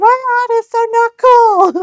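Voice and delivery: put-on shrill, very high, loud voice of a young boy. Imitating a boy, attempting the sound of a kid before his voice drops. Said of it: "attempt the sound of a kid whose balls hasn't dropped".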